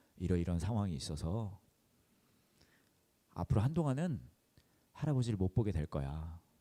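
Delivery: ordinary talk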